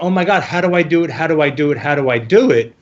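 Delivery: plain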